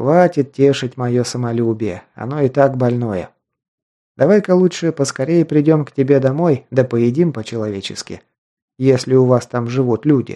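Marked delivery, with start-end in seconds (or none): none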